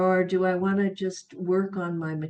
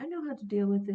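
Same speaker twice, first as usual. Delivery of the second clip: put-on sweet, humble voice, quieter; 4 dB quieter than usual. Retelling a patient's reply to a question about pain: imitating someone speaking sweetly and humbly. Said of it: "very sweetly and humbly".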